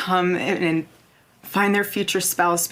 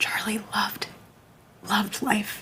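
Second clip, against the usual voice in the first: soft, hushed whisper under the breath; 3 semitones higher, 6 dB quieter than usual. Speaking in a clip being played: whispering. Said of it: "This whispering thing she's doing".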